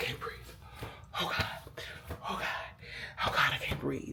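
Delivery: panicked breathless voice. Retelling a panic attack on a flight: reenacting panicked breathlessness. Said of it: "I'm just freaking out".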